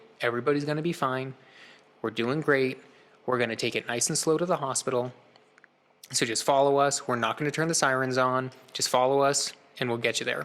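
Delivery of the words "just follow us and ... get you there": normal talking voice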